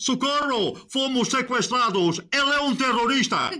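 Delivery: frightened, high-pitched panicked cry. A character thinks a stranger holding a paper is a terrorist, panicked cry. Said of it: "Calma, tem calma!".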